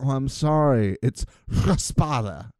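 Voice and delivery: put-on, condescending quiz-host voice. Imitating a quiz host re-pronouncing a word: condescending Alex Trebek impression. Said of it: "he wasn't a condescending man".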